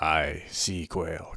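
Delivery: laid-on, put-on pirate accent. Saying the fish term sea quail, done in a pirate voice. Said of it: "I have to use the pirate voice".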